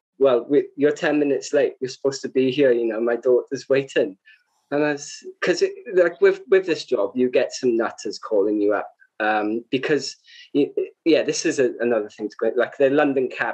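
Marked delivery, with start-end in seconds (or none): none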